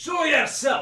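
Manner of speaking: very loud, very high-pitched shout. Voicing a stranger demanding someone reveal themselves: shouting. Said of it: "you wake up to hear".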